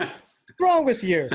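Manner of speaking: mock teasing outburst, very high and loud. Retelling a father's reaction at the Grand Canyon: imitating father teasing. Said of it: "he was teasing".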